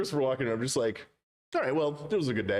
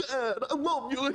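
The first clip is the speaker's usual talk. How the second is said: put-on halting, odd-cadence voice, pitched higher; 12 semitones higher than usual. Retelling a movie son's lines: bad Christopher Walken impression. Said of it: "a bad Christopher Walken impression on purpose".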